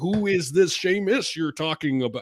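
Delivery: weird fake American accent with a European tinge. Imitating a man trying to do an American, in a weird fake American accent. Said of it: "one of those weird American accents that Europeans do".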